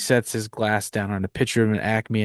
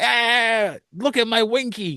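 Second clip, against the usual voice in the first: put-on gravelly New York voice, higher pitch; 12 semitones higher than usual. Describing a cartoon baby in a movie, doing his voice: Baby Herman voice. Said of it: "He sounds a lot like this too".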